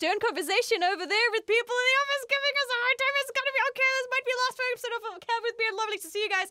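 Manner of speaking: very high voice, words tumbling out fast. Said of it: "You talked really fast".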